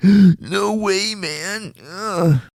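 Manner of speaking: very high, very slow, drawn-out whine. Imitating a kid from the movie gasping: whiny Melvin voice. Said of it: "He's a whiny little bitch".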